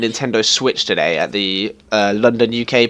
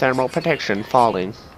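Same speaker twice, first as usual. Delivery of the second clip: soft robotic alien voice; 5 dB quieter than usual. Mimicking the robot lady's announcement, in a robot alien voice. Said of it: "That's my uh, robot alien voice".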